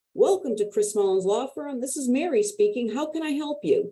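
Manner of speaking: big cheerful smiling voice, lifting in pitch. Showing how to greet callers to a law firm with a big smiling voice. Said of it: "I had a big voice and a big smile in my voice".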